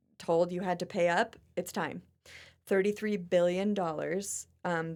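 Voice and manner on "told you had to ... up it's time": ordinary talk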